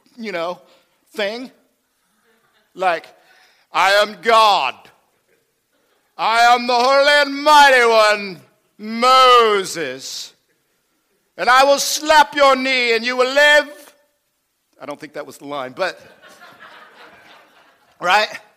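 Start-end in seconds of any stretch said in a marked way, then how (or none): 3.7-14.0 slow, booming, deep-sounding voice of God. Mocking a film's child voice of God, showing how it should sound, booming Charlton Heston God voice. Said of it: "God's voice sounds like Charlton Heston through a boom".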